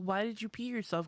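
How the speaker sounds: put-on livid, furious voice. Retelling a mom's question at school after an accident: imitating a livid mom. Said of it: "my mom was livid".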